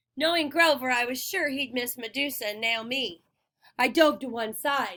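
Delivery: ordinary delivery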